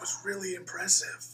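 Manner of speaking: high, hushed whisper. Playing a character who whispers praise to Swanson: whispering. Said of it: "I whisper to Swanson".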